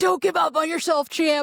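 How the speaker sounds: rousing coach cheer. Describing an imaginary coach cheering them on, imitating a coach's cheering yell. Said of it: "imaginary coach yelling at me".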